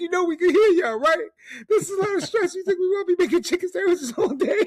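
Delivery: mock very high, very loud, near-crying tearful outburst. Retelling a viral video of a stressed employee snapping: imitating someone on the verge of tears. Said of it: "on the verge of tears".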